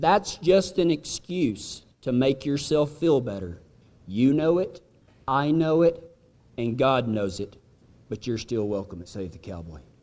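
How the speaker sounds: hushed, quiet, frank, straight-talking aside. Showing what to say after leaning in: quiet voice. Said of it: "and in a quiet voice".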